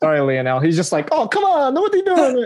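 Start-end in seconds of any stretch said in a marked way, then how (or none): 1.1-2.5 put-on Italian accent, pitched way up. Joking that Messi missed the list, doing a Lionel Messi impression, Italian accent. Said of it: "That's like an Italian accent".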